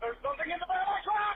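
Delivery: screaming in terror. Reporting something in the bed of the truck: screaming in terror. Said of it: "he's screaming for his life".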